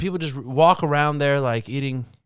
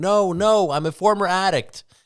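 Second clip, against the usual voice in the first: play-acted frantic, desperate, high panicked pleading scream; 5 semitones higher than usual. Imagining being sent to a cocaine lab by a drug lord, retelling a scream. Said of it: "and I'm screaming".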